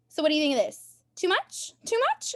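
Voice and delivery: weird, high, swooping little dog voice. Speaker retells a dog trying on quarantine outfits, weird little dog voice. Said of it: "he has this weird little voice".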